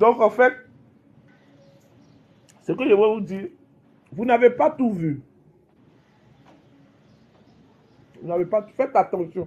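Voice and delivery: speaking with mouth full, eating while talking. Speaker addresses listeners while eating at ten o'clock, speaking with mouth full. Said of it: "Excusez-moi si je mange la bouche pleine".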